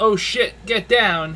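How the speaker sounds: muffled shout. Voicing a guard as a grenade flies in: muffled guard shout. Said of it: "You hear a muffled".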